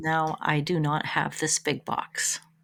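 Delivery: ashamed, sheepish tone. Answering another speaker during a game rating discussion: ashamed tone. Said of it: "the shame in your voice right now".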